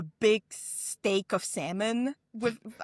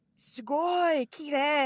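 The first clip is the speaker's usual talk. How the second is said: put-on broken Japanese, higher; 7 semitones higher than usual. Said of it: "with my really bad Japanese".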